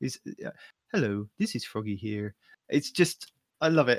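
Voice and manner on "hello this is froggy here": smooth, easy host-style delivery. Praising a video maker's voice and imitating his intro: Froggy's smooth voice. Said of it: "listening to that smooth, smooth voice".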